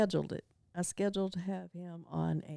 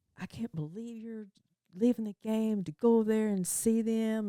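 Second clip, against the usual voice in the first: mock furious, ballistic angry ranting outburst; 4 semitones higher than usual. Retelling how Carla reacted to the speaker leaving the game, imitating Carla's angry outburst. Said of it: "She got so mad and started".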